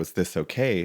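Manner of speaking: ordinary talk, nothing marked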